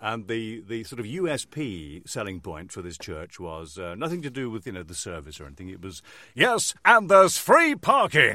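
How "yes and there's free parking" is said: loud, stretched-out, drawn-out announcer voiceover voice. Retelling a radio advert for a church in the X Factor voice. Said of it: "in that voice".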